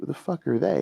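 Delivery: hushed whisper. Voicing strangers in a parking lot eyeing newcomers: whispering strangers. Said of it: "you can hear them whispering".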